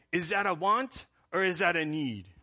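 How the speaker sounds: put-on speaking with a French accent. Retelling a man at church quizzing his kids; french accent. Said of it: "he said it in a French accent".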